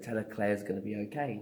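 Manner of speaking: usual speaking voice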